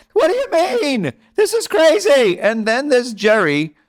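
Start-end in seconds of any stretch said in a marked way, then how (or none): 0.1-2.3 very high, full-on yelling rant. Describing two Seinfelds, doing the yelling Seinfeld impression. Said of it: "yelling Seinfeld".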